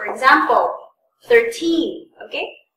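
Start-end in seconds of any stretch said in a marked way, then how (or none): 1.2-2.1 put-on thirteen, stress on teen, second syllable drawn out. Teaching how to tell thirteen from thirty, stress on teen in thirteen. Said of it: "it's always the second second syllable that is prolonged and uh, emphasized".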